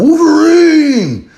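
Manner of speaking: high-pitched yell, stretched out slowly. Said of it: "go running down your street yelling".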